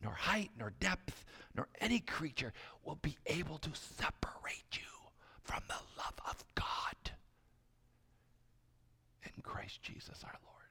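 softly whispered. Speaker quotes what god whispers to listeners, whispering god's words. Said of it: "But God whispers".

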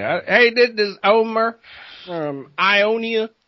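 put-on Southern accent. Joking introduction of Omer from Ionia, Southern accent. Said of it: "Let's do it with Southern accent".

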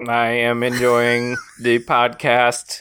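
put-on alien voice. Playing an alien listener writing in: put-on alien voice. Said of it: "why does an alien sound just like RoboCop".

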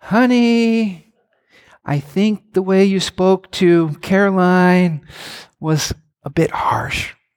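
mock sweet, gentle, slow, drawn-out tone. Describing how she gives correction, imitating her saying it nicely. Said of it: "she says it so nice".

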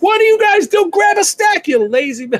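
mock screaming. Recounting watching people load sticks onto bikes, retelling screaming at the TV. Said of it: "I'm screaming at the TV".

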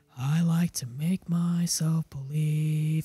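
slow, unvoiced whispered line.

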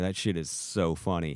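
ordinary talk

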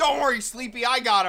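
high-pitched, loud yelling call.

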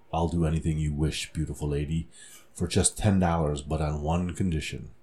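deepest possible, very low voice. Reading a joke aloud, Phil offering the woman anything: deepest voice. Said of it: "said in his deepest voice".

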